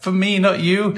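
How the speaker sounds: shrill, very high, loud shout. Retelling a moment when they had to call out to someone; retelling a shout. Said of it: "I had to shout".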